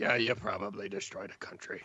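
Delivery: muttered under breath. Voicing Brontus in the game: muttering under his breath. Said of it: "under his breath go".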